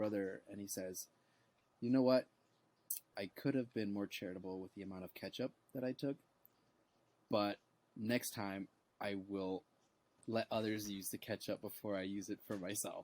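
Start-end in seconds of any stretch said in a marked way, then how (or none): none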